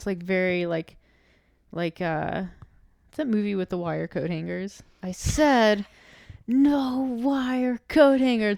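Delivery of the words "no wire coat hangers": slow, drawn-out, higher-pitched ranting delivery. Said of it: "Mommy Dearest".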